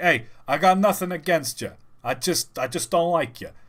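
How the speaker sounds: loud, plain, stock New York accent. Showing off accents they can do, the speaker switches to a typical New York accent. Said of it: "typical New York".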